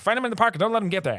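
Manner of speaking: mock barking old-fashioned voice. Retelling a film scene of a judge ordering his underling: Judge Omar Gaffney barking orders. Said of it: "he barks at his underling guy".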